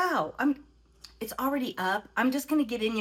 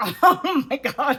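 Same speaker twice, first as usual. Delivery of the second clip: talking through laughter, louder; 3 semitones higher, 8 dB louder than usual. Reacting to one's own trading mistake: laughing while talking. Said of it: "I can't stop laughing".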